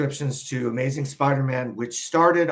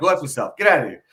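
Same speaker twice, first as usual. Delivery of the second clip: mocking taunting voice, louder; 3 semitones higher, 5 dB louder than usual. Retelling how friends used to taunt a sellout: imitating old sellout taunts. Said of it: "we used to talk like that".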